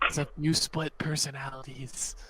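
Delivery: soft, half-swallowed mutter under the breath. A character being introduced to newcomers remarks aside, muttered under breath. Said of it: "I'll say it like under my breath".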